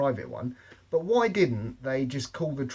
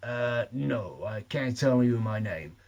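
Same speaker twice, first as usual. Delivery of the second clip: very slow, drawn-out, fake American accent. Retelling a man phoning the NSA and answering a receptionist: put-on American accent. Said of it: "he's doing his American accent".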